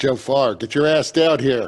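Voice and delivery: calling upward loudly. During a tabletop game scene, a character calls to someone above, yelling up. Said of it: "I would yell up".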